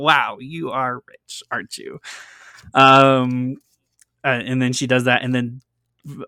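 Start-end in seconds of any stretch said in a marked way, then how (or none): 0.0-2.0 snobbish, hoity-toity exclamation with airs. Showing how a character talked: snobbish Mrs Mason voice. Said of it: "the way she talked was like".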